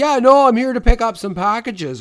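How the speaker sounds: loud cartoon Canadian accent. Describing an actor in a fat suit in a movie, retelling his cartoon hoser-type accent. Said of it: "like hoser-type accent".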